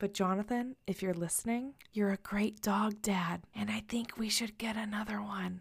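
hushed whisper. Podcast host whispering so the man in the kitchen won't hear, whispering. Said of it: "I'm whispering because he's totally in the kitchen".

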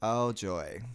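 unexcited, flat tone. Reacting as the other speaker introduces the runway segment: flat, unexcited. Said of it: "I don't sound excited at all today".

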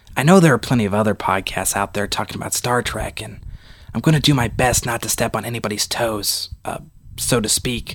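hushed whisper. Host opening his star trek podcast, whispering. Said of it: "you're probably all wondering why I'm whispering".

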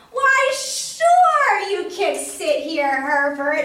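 very loud, booming, very slow, "sure" stretched. Narrator suddenly speaks to Herbert on the bus, very loud. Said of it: "I raised my voice real loud".

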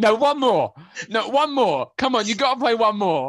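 insistent, high, loud pleading yell. After the club music cuts out, the speaker imitates James screaming on the floor. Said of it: "just starts screaming".

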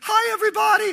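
very high, loud, squeaky cartoon voice. Retelling how he first greeted everybody: squeaky Mickey Mouse voice. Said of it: "I sound like Mickey Mouse".

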